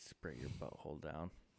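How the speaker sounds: very quiet, low mumble under the breath. Speaker adds a crude aside, mumbled. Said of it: "because I mumbled it".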